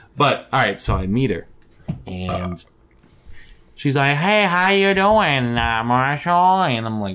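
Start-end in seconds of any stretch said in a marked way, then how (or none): 4.2-6.6 slow, high, deaf-sounding voice. Retelling how a woman talked at a meeting: imitating a deaf-sounding voice. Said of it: "she talked like she was deaf".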